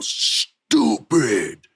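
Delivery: deep, angry, fuming wrestler-style outburst. Retelling a wrestler's angry yell on live TV: deep booming Randy Orton voice. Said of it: "with that deep Orton booming voice".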